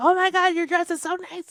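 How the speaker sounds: loud, high, in-your-face gushing enthusiasm. Retelling a girl who came up at a party, imitating a super loud girl. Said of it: "she's like super loud and in my face".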